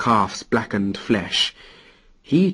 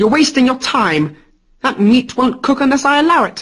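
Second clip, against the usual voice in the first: smug, gloating, very high-pitched crowing; 12 semitones higher, 4 dB louder than usual. A supernatural eagle on an oak bough speaks to Odin: gloating. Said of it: "said the eagle in a gloating tone".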